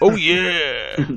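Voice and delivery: loud, stretched-out, drawn-out shout. Describing the party breaking through the wall: Kool-Aid Man shout. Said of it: "that cartoon character is that promotes children's drinks".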